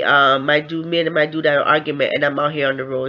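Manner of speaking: usual speaking voice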